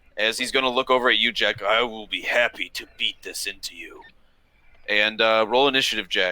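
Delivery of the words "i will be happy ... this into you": quieter grunting orc voice. A game master voices an orc threatening the player Jack, in a grunting orc voice. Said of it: "the orc rolls his eyes and grunts".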